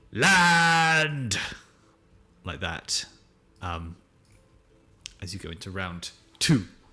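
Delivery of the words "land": very loud, high, stretched-out, drawn-out shout. Voicing the first mate calling out during a storm: shouting. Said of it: "he's shouting".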